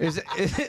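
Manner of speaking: mock shocked disbelief, high, laughing, squealed.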